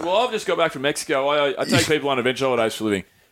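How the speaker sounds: plain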